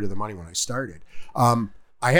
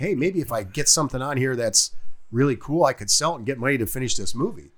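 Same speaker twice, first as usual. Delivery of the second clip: usual speaking voice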